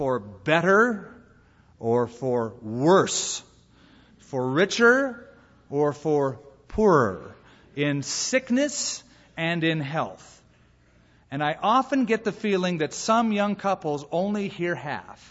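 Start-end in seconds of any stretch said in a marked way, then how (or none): 0.0-10.3 slow, deliberate delivery with each phrase spaced. An officiant shows how he says the vows to young couples: slow and deliberate. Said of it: "So I'll say them slowly".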